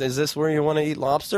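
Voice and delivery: ordinary talk, nothing marked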